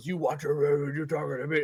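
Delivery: put-on demon voice. Retelling Mephisto's reply when another man got in his face, Mephisto demon voice. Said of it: "Just goes all demon voice".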